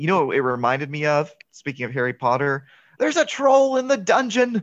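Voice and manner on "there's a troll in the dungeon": very high-pitched, hysterical delivery. Quoting a movie character announcing something terrible: imitating Professor Quirrell hysterically. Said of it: "announcing something terrible hysterically".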